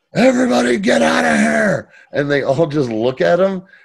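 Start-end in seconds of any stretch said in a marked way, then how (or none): 0.2-2.0 very high, ragged, rough yell. Recapping a TV scene where Mick storms a state dinner, retelling Mick's yell. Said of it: "he yells".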